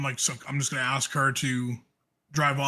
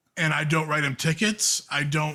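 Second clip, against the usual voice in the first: plain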